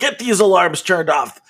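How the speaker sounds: high, barked call, held in check.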